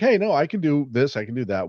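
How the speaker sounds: ordinary delivery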